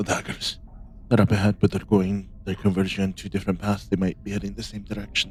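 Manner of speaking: low, hushed murmur under the breath. A player's character speaks to the party in a low, hushed voice. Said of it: "in the low, hushed voice".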